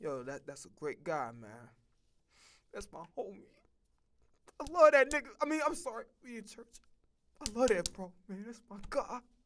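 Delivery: gushing, swooping, emotional voice. Acting out a guy speaking at a funeral: imitating a mourner at a funeral.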